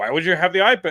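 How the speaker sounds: mock hollered, loud yell. Retelling airport staff questioning about an ipad: imitating people yelling. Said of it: "These people are yelling at me".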